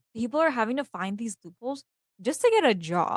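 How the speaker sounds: usual speaking voice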